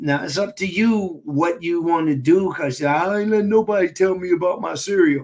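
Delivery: derisive, mocking tone. Speaking to listeners about foods to stop eating, slipping into a mocking voice. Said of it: "That's that's my mocking voice".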